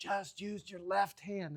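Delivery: soft, hushed, half-whispered word. Recounting tapping someone on the shoulder to speak in their ear, half-whispering. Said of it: "I have to whisper in their ear".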